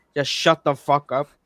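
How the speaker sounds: ordinary talk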